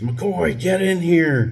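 high, screamed delivery. Telling how his angry sergeant called him into the office, retelling a sergeant's scream. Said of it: "and then he screams".

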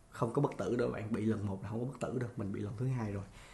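soft, weak, worn-out tired voice.

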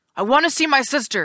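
pressing, insistent voice. Nico answers the ghost who ordered him to answer questions; demanding. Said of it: "Nico demanded".

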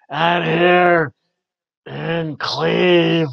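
raspy, very slow and loud. Recalling how a wrestling manager announced a city: raspy Paul Ellering voice. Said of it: "he just had a raspy voice".

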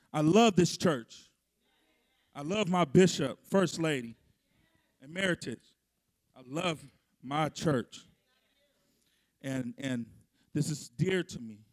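very low voice, slightly emotional. Telling the congregation they love this church, a little emotional. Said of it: "I'm a little emotional today".

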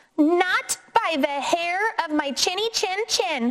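high-pitched shouting call. The first javelina answers the coyote calling to be let in, shouting. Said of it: "shouted the first javelina".

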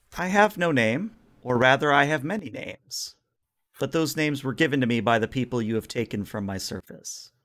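calm, serene, angelic feminine voice. Voicing a being that speaks again as one: calm, serene, angelic feminine voice. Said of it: "a very calm, singular voice, very serene".

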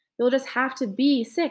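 ordinary delivery

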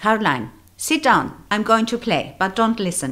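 put-on loud, high-pitched voice with Dutch accent. Retelling how she invited the speaker into her living room, imitating Oma's Dutch accent. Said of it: "in her Dutch accent".

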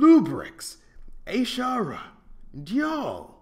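shrill, booming, very loud, high swooping yell. A man takes a deep breath and calls out again: yelled. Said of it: "yelled again".

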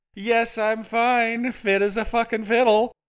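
wild, manic squealing, very high. Narrator voicing Hal answering Rachel's question, squealing. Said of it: "He squealed".

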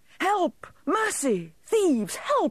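very high, slow, drawn-out yelling. Caught in his own trap and followed by others, he is yelling. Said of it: "yelled Grumps".

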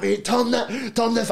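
play-acted, high, rough-edged scream. Retelling how they screamed at the driver turning into oncoming traffic, retelling a scream. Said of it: "I'm screaming at him".

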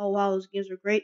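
normal talking voice

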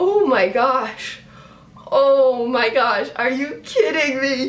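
on the verge of tears. Speaker reacting as the Giants pull it off, about to cry. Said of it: "I think I'm gonna freaking cry".

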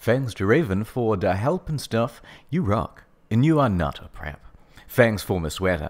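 normal talking voice

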